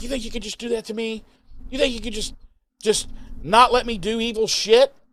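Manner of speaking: mock very high, seething, furious, accusing rant. Retelling a scene where a character confronts the heroes: imitating a furious Warren. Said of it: "super murder pissed".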